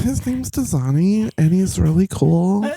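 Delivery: accurate put-on voice, high, slow, drawn-out. Retelling what a friend said about her boyfriend: imitating Kathy's voice. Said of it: "that's exactly how the voice sounded".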